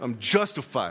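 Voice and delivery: sassy, with a little attitude. Preacher shows the congregation how to say it to someone, with a little attitude. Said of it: "And say it with a little bit of an attitude".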